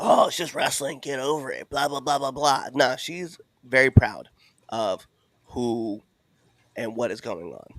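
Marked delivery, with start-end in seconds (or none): 0.0-2.6 scoffing, mocking, dismissive brush-off voice. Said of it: "Y'all over here".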